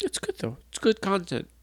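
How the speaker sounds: teary, welling-up voice. Answering a touching question about grief, tearful. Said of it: "As he says with tears in his eyes".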